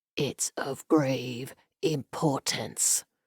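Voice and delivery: tense, strained, very slow whisper. Narrator reading a story, a man answering a woman, in a strained whisper. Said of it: ""I only want to be sure [name]'s fever has not returned again. / [name] hissed before the scream dislodged from her throat. / Perhaps fever hadn't fully left him, / he said in a strained whisper".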